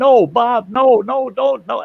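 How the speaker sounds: mock very high, very slow, loud, drawn-out shout. Running over as a man rides off toward an embankment, retelling a yell. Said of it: "I'm yelling, I'm running over that way, yelling".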